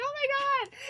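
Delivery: very high, play-acted laughing through the words. Retelling watching a quiet theater scene with sisters: retelling laughing while talking. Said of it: "we're just laughing like".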